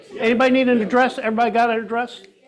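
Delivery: loud, quick, carrying call-out.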